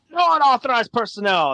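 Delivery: shouted, very high and loud yelling. Narrating the scene, the storyteller voices the ship captain: yelling ship captain. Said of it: "The captain yells".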